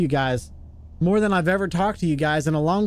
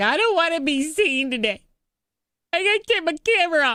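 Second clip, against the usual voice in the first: very high-pitched voice, reluctant in tone; 9 semitones higher than usual. Imitating the streamer who raided, quoting her: imitating Jenny. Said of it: "We get one that she's like".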